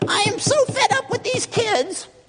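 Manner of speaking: put-on very high, peevish, petulant, cranky old-man voice. Speaking to newer believers, imitating a wrong picture of god: mock petulant old man voice. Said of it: "He sounds like some petulant old man up there".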